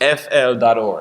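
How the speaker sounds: slow, low, deliberate spelling out letter by letter. Spelling out the organization's web address, said slowly. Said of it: "I want to say it slow".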